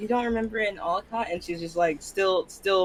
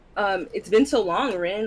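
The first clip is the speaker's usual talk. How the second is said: plain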